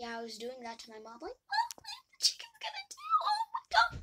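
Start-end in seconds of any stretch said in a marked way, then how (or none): 1.3-4.0 acted sobbing yell, very high and very loud. Telling about the chickens getting loose, retelling yelling while crying to mom. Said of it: "yelling and crying at the same time".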